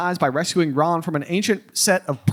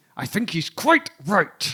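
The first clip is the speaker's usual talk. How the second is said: put-on voice through clenched teeth. Recapping a book scene, voicing Molly's reply in mock speech through clenched teeth. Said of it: "Through gritted, yeah, clenched teeth".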